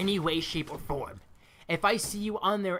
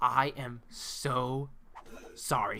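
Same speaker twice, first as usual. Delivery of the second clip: very slow, practically whispering; 6 semitones lower, 4 dB quieter than usual. Retelling how the librarian leaned in and apologized: imitating someone whispering. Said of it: "practically whispering right now".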